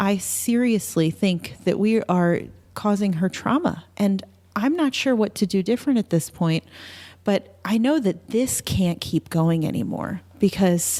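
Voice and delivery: ordinary talk, nothing marked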